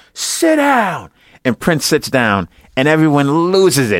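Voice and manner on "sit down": play-acted, very high, sudden shout. Retelling how some guy yelled out during the movie: imitating someone yelling. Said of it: "he just yells out".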